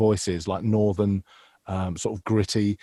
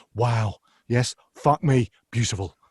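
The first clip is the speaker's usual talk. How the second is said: energetic, animated chef voice. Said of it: "you've gotta get that energy".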